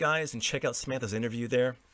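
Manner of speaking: plain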